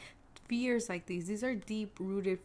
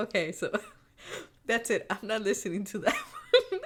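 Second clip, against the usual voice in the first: talking through laughter, louder; 2 semitones higher, 5 dB louder than usual. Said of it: "I'm laughing".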